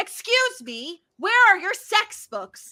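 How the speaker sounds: mock, high, near-shouted blurt. Retelling a woman at a bookstore counter, imitating her near-shout. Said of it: "she practically shouts it".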